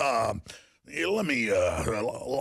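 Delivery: very slow, stumbling, halting put-on hesitant pauses. Mocking a politician's fake pauses as if thinking: imitating Obama's fake hesitant pausing. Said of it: "Obama does the same little fake thing where he bites his lip and pauses and goes".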